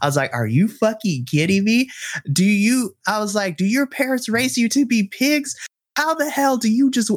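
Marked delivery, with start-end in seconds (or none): 0.3-5.6 yelling, much higher. Retelling what the speaker yelled at someone: retelling a yell. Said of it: "I yelled at them so hard".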